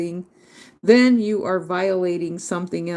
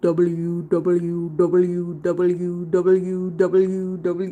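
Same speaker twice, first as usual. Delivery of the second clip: put-on very slow, creepy Indian accent. Saying the letters W W W aloud as a joke: put-on Indian accent. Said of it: "Sound like creepy Indian person from India".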